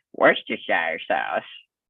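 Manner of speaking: deep put-on Texan accent on "Worcestershire sauce". Quoting what the little brother said, in a texan accent. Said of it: "he said it in a Texan accent too".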